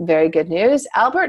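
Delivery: ordinary delivery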